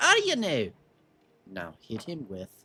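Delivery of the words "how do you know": insistent, loud, very high-pitched voice. Voicing a dwarf who repeats his question to a player: repeating louder. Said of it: "He repeats louder".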